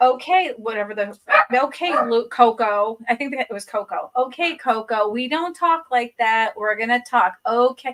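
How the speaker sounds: normal talking voice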